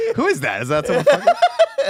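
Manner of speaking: high, loud, laughing incredulous outburst.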